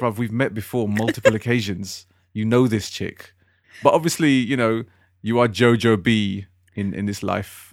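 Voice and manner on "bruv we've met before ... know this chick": plain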